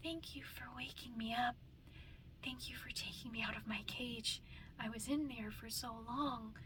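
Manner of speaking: high, invented put-on character voice. Showing the voice they did yesterday for Poppy, in Poppy's voice. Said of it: "I was doing Poppy's voice. Poppy's like".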